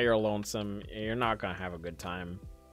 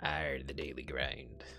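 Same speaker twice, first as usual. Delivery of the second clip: put-on pirate voice, much lower, quieter, slower; 7 semitones lower, 8 dB quieter than usual. Back to the daily grind after watering the berries, in a pirate voice. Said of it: "I don't know why I'm a pirate now".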